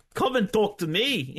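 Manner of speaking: put-on English accent. Asked to redo the same dialogue with an English accent: Dave Mastiff voice, English accent. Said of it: "with an English accent mixed in".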